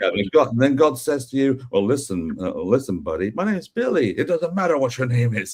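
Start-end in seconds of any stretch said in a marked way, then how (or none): 1.7-5.6 put-on, mocking wrestler promo voice, pitched higher. Retelling a wrestling promo that mocks Billy Gunn praying: imitating The Rock mocking Billy Gunn. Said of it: "he takes the piss out of Billy Gunn".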